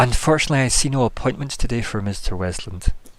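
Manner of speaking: weary, forced, strained polite friendliness. Voicing a character in a scene, with forced polite friendliness. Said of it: "please kill me level of polite friendliness".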